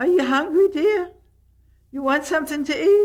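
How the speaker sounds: very high character voice held up in head voice. Showing how the character Marie talks: Marie's voice. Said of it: "Marie says".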